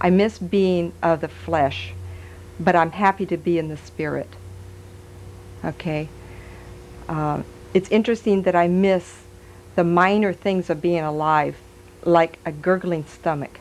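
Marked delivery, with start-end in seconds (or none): 0.0-1.9 much slower, deliberate delivery. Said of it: "see, you talk too fast".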